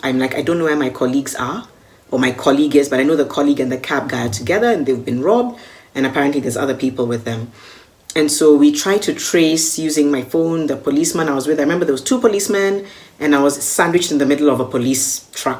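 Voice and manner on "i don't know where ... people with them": ordinary talk, nothing marked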